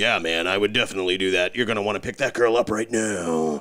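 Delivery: absurd, goofy, hammed-up monster voice. Describing a cartoon monster, then doing its ridiculous voice. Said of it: "talks in this, like, ridiculous voice all the time".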